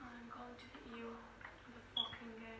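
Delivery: quiet, menacing voice.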